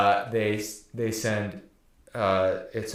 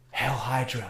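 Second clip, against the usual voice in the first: hushed whispering; 3 dB quieter than usual. Retelling a scene where Cap reveals himself to an agent, whispering. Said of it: "he whispers".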